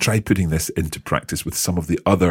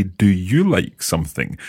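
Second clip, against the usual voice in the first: ordinary delivery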